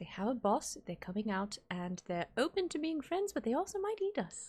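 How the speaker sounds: soft, hushed, murmured whisper. In a tabletop game, a player's character whispers to a party member next to them. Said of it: "I'm just like whispering to Fallen".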